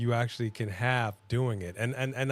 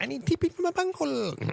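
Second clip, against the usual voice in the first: very high, rough cartoon voice. Answering the other speaker's cornholio joke: Cornholio voice. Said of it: "The great cornholio".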